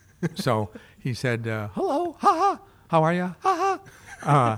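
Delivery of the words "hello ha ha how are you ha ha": put-on cartoon mouse voice, much higher, slower, laughing. Retell how he went up to the mic and did his act, in a Mickey Mouse impression. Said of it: "he did his Mickey Mouse impression".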